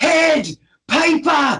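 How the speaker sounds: put-on high-pitched yell in a Scottish accent. Recalling a film dad yelling at his kid, imitating Mike Myers Scottish dad mock-yelling. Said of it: "where he's like yelling at the kid".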